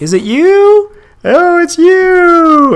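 very high, very loud nasal salesman drawl. Retelling a film scene, imitating a nasal annoying insurance salesman.

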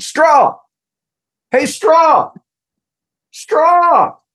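put-on, very high, insistent calling-out hollering. Telling how dad at the railing called out to Daryl Strawberry, retelling dad's yell. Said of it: "he starts yelling".

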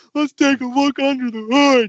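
high-pitched, dim, slow-witted simpleton drawl. Speaker retells a man in a mechanic's uniform talking in a simpleton drawl. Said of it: "he starts talking like in this like a simpleton drawl".

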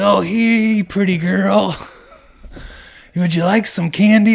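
skin-crawling, creepy voice, high-pitched and loud. Retelling a man offering candy to the speaker's nine-year-old daughter, imitating a creepy man. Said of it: "Like in the creepiest fucking possible like way".

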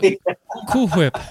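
loud, high voice, stumbling and restarting on cool. Retelling a cartoon scene about pronouncing Cool Whip: Stewie Griffin voice. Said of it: "Stewie Griffin was, like, trying to pronounce cool, Cool Whip, and he's like".

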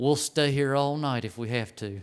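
put-on whisper. Retelling what a brother at the altar said: imitating someone whispering. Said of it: "he's gonna whisper in my ear".

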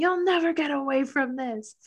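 mild put-on scream, high and kept small. Recounting a movie scene where a woman is dragged out by security, retelling a scream. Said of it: "She's screaming".

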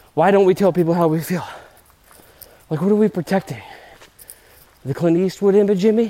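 panting, breathless. Climbing a massive hill mid-conversation, out of breath. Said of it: "I'm out of breath".

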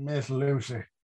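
thicker, leaned-into Texan accent. Saying a character's name again, a little more Texan: Texan accent like Billy Campbell. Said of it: "wanna try that again a little more Texan".

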